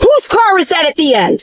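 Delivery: severe, very stern, barked delivery. Retelling an old man storming into a dispensary asking about a car, mock-stern demand. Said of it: "basically very sternly says that".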